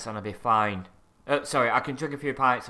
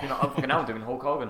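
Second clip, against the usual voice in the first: ordinary delivery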